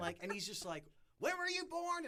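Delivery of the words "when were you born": mock shrill, very high-pitched screaming. Retelling the commissioner screaming at a scared seventeen-year-old: imitating Lou Levy screaming. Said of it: "he's screaming at me".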